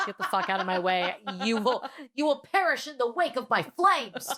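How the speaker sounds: mock-angry high elf voice. Speaker claims to be an angry elf and acts it out; mock-furious rant. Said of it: "I'm an angry elf".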